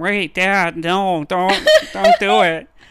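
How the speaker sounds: very loud, belting character voice, pitch swinging wildly. Retelling a film scene where Hiccup begs his dad: Jay Baruchel voice as Hiccup. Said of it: "who's played by Jay Baruchel, if you know his, his voice".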